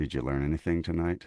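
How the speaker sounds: very low, calm, unruffled voice. Retelling what he asked a man who expected screaming: retelling in low, calm voice. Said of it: "in a very low, calm voice".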